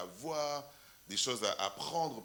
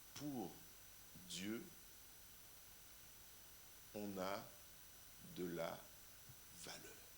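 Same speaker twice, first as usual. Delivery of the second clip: very slow, halting whisper with emphasis; 3 semitones lower, 16 dB quieter than usual. Repeating a very important point instead of saying it fast, slow and deliberate. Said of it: "mais moi je vais le dire lentement".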